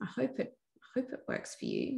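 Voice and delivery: timid, hesitant, unsure, pleading, fading soft.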